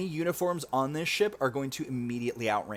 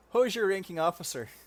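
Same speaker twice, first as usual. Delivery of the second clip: put-on Canadian accent, higher; 6 semitones higher than usual. Reading a caption aloud jokingly: imitating a Canadian accent. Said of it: "somebody in a Canadian accent".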